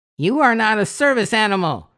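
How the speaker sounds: very high, cracking, hissed quack. Narrating a story where Donald Duck confronts a dog, cracking, quacking Donald Duck voice. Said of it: "Donald Duck said in his cracking, quacking voice".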